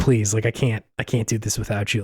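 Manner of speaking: mock, put-on begging voice. Describing a king hunched over his throne begging his wife to return: imitating a king begging. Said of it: "he's just like begging his like wife to come back".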